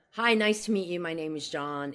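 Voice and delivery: normal talking voice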